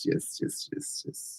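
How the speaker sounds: very soft, unvoiced whisper.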